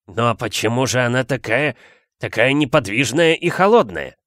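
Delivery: ordinary delivery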